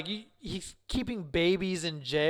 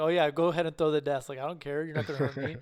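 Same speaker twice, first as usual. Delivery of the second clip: acted-out unafraid, dismissive, unbothered taunting tone; 2 semitones lower than usual. Retelling a movie scene of Lex Luthor taunting Superman: imitating Lex Luthor unafraid. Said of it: "he wasn't scared, like, at all".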